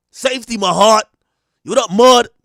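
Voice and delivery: put-on very loud, high New York women's street accent. Mocking how New York women talk: imitating New York women talking. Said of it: "Even the women talk like that".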